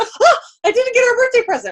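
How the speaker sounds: mock panic, high and loud, blurted through laughter.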